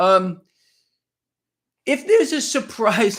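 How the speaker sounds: voice breaking and cracking as it goes, slow. Giving a market forecast to listeners, voice cracking. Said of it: "my voice is cracking".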